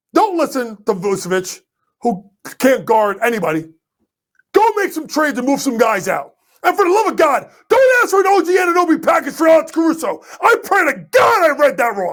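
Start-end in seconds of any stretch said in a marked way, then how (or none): 6.6-12.1 outright shouting, high-pitched and heated. Giving advice to chicago about trades, yelling. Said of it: "I'm sorry I'm yelling".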